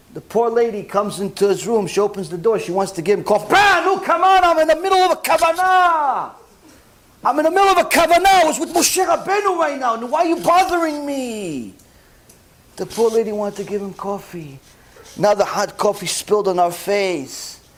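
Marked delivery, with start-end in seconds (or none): 3.5-11.7 put-on high, irritated, bothered yell. Acting out a husband turning away his wife's coffee: imitating a husband yelling at his wife. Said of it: "yelling at his wife at the same time".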